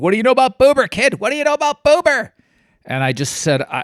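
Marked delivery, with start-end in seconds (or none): 0.0-2.3 frantic, loud, shrill, very high, climbing scream. Retelling a host on the phone demanding an answer: imitating Regis screaming. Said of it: "Regis started screaming at me".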